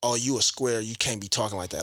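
usual speaking voice

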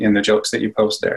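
normal talking voice

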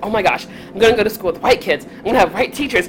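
put-on giddy, thrilled, super excited, rattled-off gush. Retelling their first day of third grade, imitating own excited past self. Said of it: "I was super excited. I was just like".

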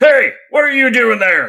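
shouting. Voicing someone down the hall as the players are exiting: yelling guard. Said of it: "when he yells that".

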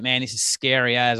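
ordinary delivery

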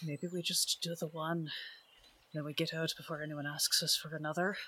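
very quiet under breath. A player's character speaks to a companion: very quietly under breath. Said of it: "very quietly under my breath just kind of say".

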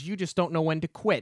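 ordinary talk, nothing marked

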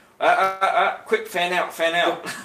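flustered, stammering, panicked robot voice, high and loud. Acting out a droid commander reacting to tactics: imitating a panicked commander droid. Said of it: "It's like".

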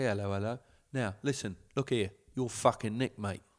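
put-on English bobby cop voice. Imagining scolding a suspended player: English Bobby cop voice. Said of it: "you'd act like an English Bobby Cop".

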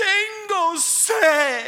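mock blood-curdling, high, loud Spanish scream, "sed" drawn out. Recounting a woman screaming in Spanish: retelling a woman's screams. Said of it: "she kept screaming it and screaming it".

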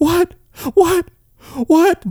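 very high-pitched, stunned, amazed disbelief. Retelling his reaction when she opened the door, retelling being blown away. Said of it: "he was blown away".

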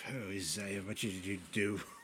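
frightened, low, fretful muttering to himself. Voicing a character reacting to a terrified bard: muttering to himself. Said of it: "Yakig mutters to himself".

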